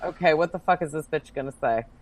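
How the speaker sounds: plain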